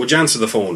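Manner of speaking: ordinary delivery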